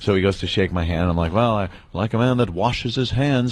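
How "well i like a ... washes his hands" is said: ordinary delivery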